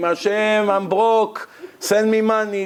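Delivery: high, pleading, crying-out voice. Acting out a worshipper praying aloud in shul: imitating a man screaming a prayer. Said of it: "this guy scream".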